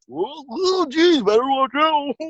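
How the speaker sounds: very high-pitched, laid-back bug-dude voice. Giving a bug a funny voice: voicing a daddy longlegs as some dude. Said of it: "Daddy Longlegs is just some dude just going like".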